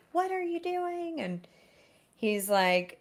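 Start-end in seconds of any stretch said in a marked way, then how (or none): 0.2-1.2 acted-out shrieking scream, very high-pitched. Retelling how she walked in and screamed at him: imitating someone screaming. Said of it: "she's screaming at him".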